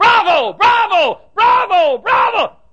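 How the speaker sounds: high, loud, hollered bravo. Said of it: "I bow and I holler".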